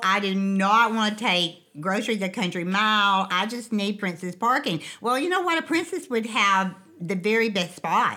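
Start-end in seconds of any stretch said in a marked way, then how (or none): none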